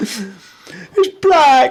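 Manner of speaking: very high, shrill, loud, swooping whine. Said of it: "You just imagine him, like, whining".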